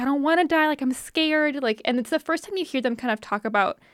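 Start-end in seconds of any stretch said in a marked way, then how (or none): 0.0-1.6 high, sad, sorrowful begging tone. Retelling game voices pleading with the player: imitating pleading voices. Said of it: "pleading with you".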